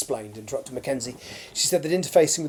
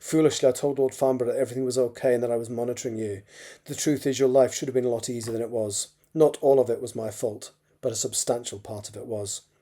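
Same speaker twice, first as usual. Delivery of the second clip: ordinary delivery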